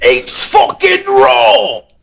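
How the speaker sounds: put-on yelling chef voice, British accent. Doing a kitchen line after someone suggests Gordon Ramsay: Gordon Ramsay voice. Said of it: "something like Gordon Ramsay".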